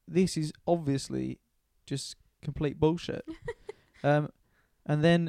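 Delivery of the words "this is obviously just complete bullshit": plain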